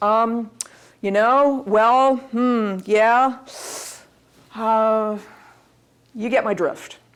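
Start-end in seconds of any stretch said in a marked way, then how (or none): 0.0-5.2 very slow, halting, hesitant ums and uhs. Listing bad speaking habits and showing them: demonstrating nervous filler words. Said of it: "Audible, nervous mannerisms".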